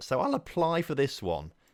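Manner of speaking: breaking voice, cracking mid-line. Speaker deciding to apply for a club manager job, voice cracking. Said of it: "As my voice just sort of broke there".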